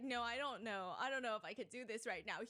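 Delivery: put-on stressed-out, panicky voice. Retelling how Speed reacted to driving into a lake: imitating stressed-out Speed. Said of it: "He gets so stressed out".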